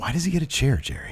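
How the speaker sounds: put-on under-breath mutter. Recounting a TV segment to another speaker, retelling an under-breath mutter. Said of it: "you can hear him under his breath say".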